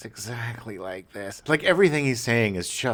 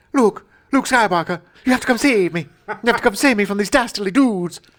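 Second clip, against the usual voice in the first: put-on very high, loud, old-timey mid-Atlantic accent; 11 semitones higher, 8 dB louder than usual. Parodying an old-fashioned script with another speaker: mid-Atlantic accent. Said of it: "everyone has a mid-Atlantic accent all of a sudden".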